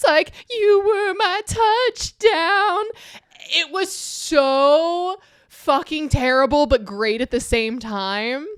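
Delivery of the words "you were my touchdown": put-on demonic scream, higher and louder. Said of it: "and screams".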